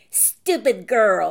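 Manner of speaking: loud, vicious snarl through bared teeth. Narrator reads a father's line to a girl in a dream, snarling. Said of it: "he snarled".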